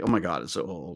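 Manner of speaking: low, soft, mock snooty sneering tone. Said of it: "It's like".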